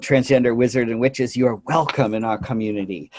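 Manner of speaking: usual speaking voice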